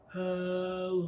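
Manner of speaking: deep, soft, playful low voice. Leading a clapping rhyme, saying hello as low as possible. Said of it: "Let's say hello as low as we can".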